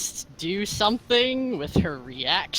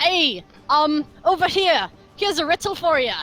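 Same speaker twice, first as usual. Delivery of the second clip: high, raised hollering; 5 semitones higher, 4 dB louder than usual. Her character calls out to a Minotaur attacking Laffy: yelling at a Minotaur. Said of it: "she yells at it".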